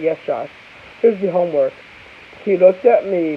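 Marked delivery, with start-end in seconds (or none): none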